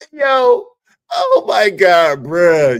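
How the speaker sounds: high, loud laughing fit. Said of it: "the reason why I'm laughing so hard".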